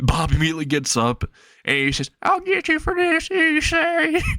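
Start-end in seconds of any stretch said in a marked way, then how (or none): 2.2-4.2 high, slow squeaky voice. Telling how Bob gets up in class to answer Issei, Bob's really squeaky voice. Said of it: "in a really squeaky voice".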